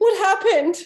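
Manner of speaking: very high, very loud, shrill panicked cry. Voicing a panicked woman answering at her door: panicked woman's voice. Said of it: "she is now even more panicked".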